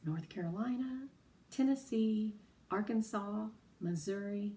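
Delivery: plain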